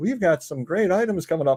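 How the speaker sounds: relaxed, low-key, easygoing sales patter. Contrasting selling styles, imitating a laid-back seller's pitch: imitating a laid-back seller.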